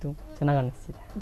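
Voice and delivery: speaking too softly.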